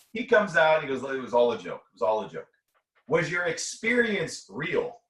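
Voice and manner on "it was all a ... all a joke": ordinary talk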